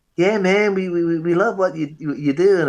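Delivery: put-on American accent. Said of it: "this American accent".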